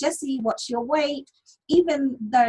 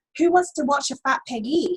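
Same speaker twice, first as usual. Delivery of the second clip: acted, dead straight, matter-of-fact delivery; 3 semitones higher than usual. Retelling what an ex said to the lady ordering: imitating a deadpan line. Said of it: "deadpan, straight in the face".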